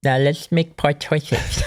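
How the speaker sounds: put-on high, babyish voice like a little baby. Suggesting a different way to say the closing line: baby voice. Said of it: "you just say it like a baby".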